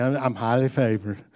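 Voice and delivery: soft, laid-on, put-on Texas twang. Retelling spotting front-row parking at Walmart: put-on Texas twang. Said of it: "I put on the Texas twang and everything".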